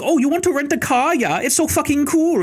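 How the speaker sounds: very high-pitched put-on German accent. Retelling a rental car clerk's lines: imitating a random German accent. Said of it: "some random German accent".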